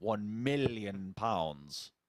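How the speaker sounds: deep villain impression. Speaker answers the other speaker's remark: Doctor Evil voice. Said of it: "Doctor Evil style".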